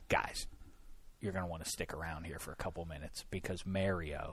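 very soft, hushed, secretive, confidential whisper. Retelling a producer giving confidential info: imitating a producer whispering. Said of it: "whispers as though this is a secret".

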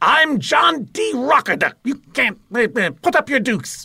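very high-pitched, zany mad-billionaire character voice. Voice actor asked to demonstrate a character he originated, John D. Rocker Duck voice. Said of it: "What was the voice? Do it".

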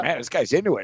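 usual speaking voice

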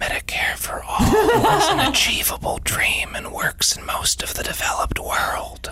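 slow, breathy, intimate whisper. Imagining a beach fantasy, whispering into someone's ear: imitating Bernie Sanders whispering. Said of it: "leans into me and whispers into my ear".

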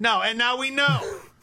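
shouting. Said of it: "Why are you yelling?".

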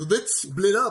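put-on cartoony delivery in kids' cartoon style. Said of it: "gonna go all Scooby-Doo on us and go".

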